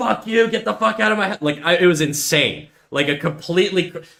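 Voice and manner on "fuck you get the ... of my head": play-acted, high, out-of-control furious yell. Recounting a woman confronting their parents, speaker retells their own crashing out. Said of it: "I was like crashing out".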